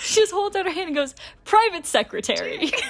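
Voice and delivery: high-pitched, talking through helpless laughter. Telling a story about a dress rehearsal, the speaker is laughing while talking. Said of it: "I'm laughing too hard".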